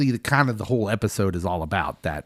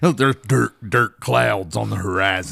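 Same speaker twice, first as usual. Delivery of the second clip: bad, put-on cowboy voice; 2 semitones lower than usual. Joking about dirt clouds on the horizon: Sam Elliott impression. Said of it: "that's my Sam Elliott".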